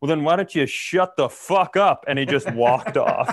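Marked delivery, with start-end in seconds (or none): 0.0-2.0 put-on drunk man's voice, higher pitch. Retelling how a man turned to a woman: imitating a drunk man. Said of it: "he drunkenly turns to her and he goes".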